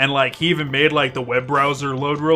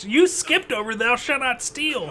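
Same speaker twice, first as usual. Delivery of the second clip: high, soft, fake old lady voice. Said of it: "pretending to be an old lady".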